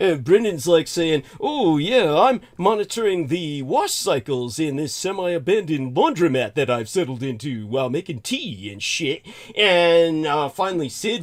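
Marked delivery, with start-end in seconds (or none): 1.4-9.3 sarcastic, satirical put-on voice, lower in pitch. Retelling a friend's answer, made up: sarcastic mock imitation. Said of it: "everything I'm saying in sarcasm and satire".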